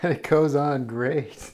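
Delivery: slow, sarcastic, dripping with sarcasm.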